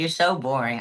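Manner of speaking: usual speaking voice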